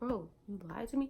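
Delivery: plain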